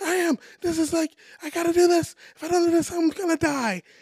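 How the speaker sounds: very high-pitched, loud emotional outburst. Retelling own words from pushing back as a kid: imitating own past emotional outburst. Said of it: "I'm, like, emotional".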